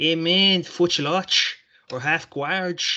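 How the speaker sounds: put-on Brazilian accent. Saying jiu-jitsu move names the way they sound in a Brazilian accent. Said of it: "when you put on a Brazilian accent and a Brazilian inflection".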